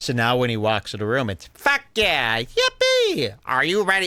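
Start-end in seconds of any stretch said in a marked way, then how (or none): 1.5-4.1 high, swooping, sing-song host-style delivery. Imitating how Tony Hinchcliffe now talks when he walks into the room: imitating Tony Hinchcliffe's catchphrases. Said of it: "doing a bad impression of his own catchphrases".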